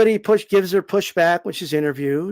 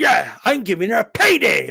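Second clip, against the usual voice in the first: boastful, overdone bragging tone, mocking; 2 semitones higher than usual. Mocking a boxer who acts like she gives the payday: mocking imitation of her bragging. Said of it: "she's acting like she".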